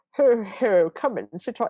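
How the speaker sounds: loud creepy voice. Mocking how a man delivered a line, imitating a creepy Santa voice. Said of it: "it's a gross Santa voice".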